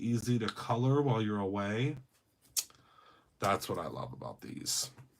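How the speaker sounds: super quiet, very soft, zoned-in talk. Coloring and talking to viewers while getting absorbed: getting super quiet. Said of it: "I'm getting super quiet".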